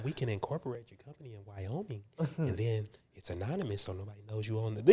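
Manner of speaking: acted whispering. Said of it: "he started whispering to me on the phone".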